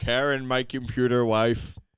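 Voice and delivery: slow, drawn-out cartoon voice. Doing a SpongeBob voice for the other speaker: Plankton voice. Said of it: "that was Plankton".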